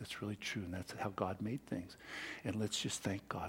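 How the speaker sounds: hushed, very quiet, soft speaking. Retelling a father talking to his little son Billy: imitating someone speaking very quietly. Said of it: "Speaking in a very quiet voice".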